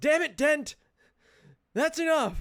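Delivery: angry shout, very high. A guard running back toward the cages yells at Dent: yelling. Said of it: "he yells".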